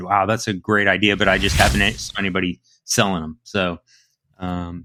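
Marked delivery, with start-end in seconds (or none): none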